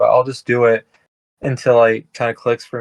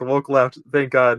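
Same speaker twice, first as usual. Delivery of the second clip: plain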